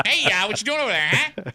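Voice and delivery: put-on old-timey, thirties-style New Jersey guy accent. Joining the bit about a NASA scientist: 1930s Jersey guy voice. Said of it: "talks like a guy from Jersey from the thirties".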